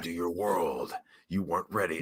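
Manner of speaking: very low, deep, hushed movie-trailer narrator voice. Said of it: "Now I literally sound like the fucking guy doing trailers".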